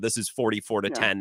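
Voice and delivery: ordinary delivery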